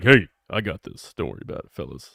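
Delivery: deep baritone register throughout. Imagining how a new character might sound when first speaking: baritone voice. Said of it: "has a baritone voice".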